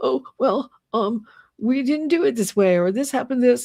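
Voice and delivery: high, whiny voice, on the verge of tears. Complaining about how he talks, imitating him: whiny Todd Blanche impression. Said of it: "Todd Blanche whining every time he talks".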